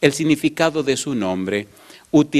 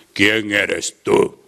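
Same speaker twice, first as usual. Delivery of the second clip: put-on deep, grave, intimidating voice; 5 semitones lower than usual. Retelling a man who stopped the speaker at a door, imitating a deep voice. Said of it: "con una voz grave decía".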